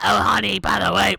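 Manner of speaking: put-on gravelly old lady voice. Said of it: "old lady voice".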